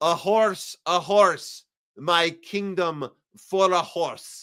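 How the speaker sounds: theatrical Russian declaiming. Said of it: "Russian Shakespearean accent".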